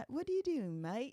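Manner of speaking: very high, terrible put-on British accent. Retelling how we talked to them, in our terrible british accents. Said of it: "talking to them in our terrible British accents".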